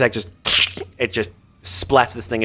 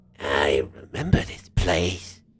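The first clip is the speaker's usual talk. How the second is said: strange throaty guttural rat-creature growl, very low, very slow; 9 semitones lower, 6 dB quieter than usual. Narrating a scene and voicing a character: strange, guttural voice. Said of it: "in a very sort of strange, more guttural voice".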